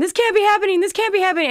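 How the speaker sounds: hysterical, very high, loud shrieking scream. Retelling how a woman reacted to a fake-wrist prank, imitating her screaming. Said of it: "she started screaming".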